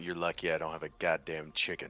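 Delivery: muttering under the breath. A player's character, looked down on by another character, muttering under breath. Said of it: "mutter under my breath".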